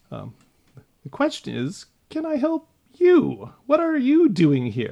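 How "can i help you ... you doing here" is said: very high, squeaky, tiny gnome voice, swooping pitch. A creature in a hallway answers the party's question, little gnomish voice. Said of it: "with a little kind of gnomish voice".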